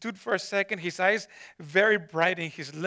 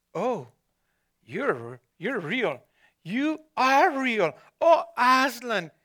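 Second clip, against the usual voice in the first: slow, drawn-out outcry, rising in pitch; 4 semitones higher, 4 dB louder than usual. A girl, about to fling herself upon him, crying out. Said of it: "cried Lucy".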